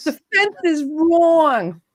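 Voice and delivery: put-on New Jersey accent. Doing a quoted line for guessing players: Marisa Tomei accent. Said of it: "That's my Marissa Tomei accent".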